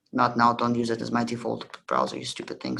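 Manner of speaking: ordinary talk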